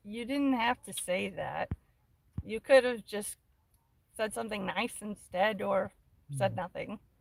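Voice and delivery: plain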